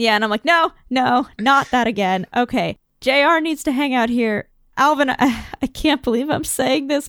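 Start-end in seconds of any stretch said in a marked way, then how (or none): none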